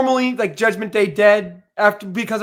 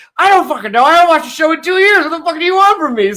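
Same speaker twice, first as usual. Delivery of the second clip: a few beers in, tipsy, pitched-up voice; 7 semitones higher, 4 dB louder than usual. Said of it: "He's a couple beers in".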